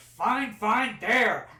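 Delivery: loud shout. Voicing a character opening a door as a falcon arrives: shouting. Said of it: "you hear him shout".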